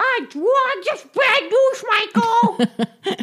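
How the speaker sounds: cartoon duck character voice. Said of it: "and they go".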